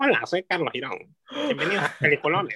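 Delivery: put-on sing-song voice with swooping pitch. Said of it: "tu voz de gente blanca, ma?".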